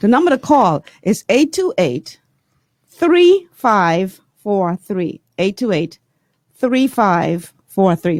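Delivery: speaking slowly. Giving the call-in number again after promising to slow down, speaking slowly. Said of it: "I will slow down a bit".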